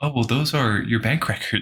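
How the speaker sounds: plain, matter-of-fact tone stating the obvious. Retelling a scene from a movie, imitating Elsa's matter-of-fact tone. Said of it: "so, like, matter of fact".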